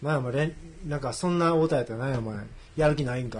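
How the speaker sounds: normal talking voice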